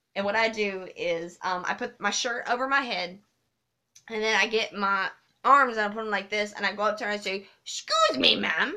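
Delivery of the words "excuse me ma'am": polite dinosaur character voice. Showing the game played with a daughter: polite dinosaur voice. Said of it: "I play the polite dinosaur".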